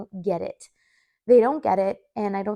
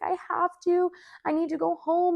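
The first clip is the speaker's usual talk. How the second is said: slow, tearful, crying pleading; 9 semitones higher than usual. Retelling a mom at a play place who must go home: imitating a crying mom. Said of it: "And she was crying".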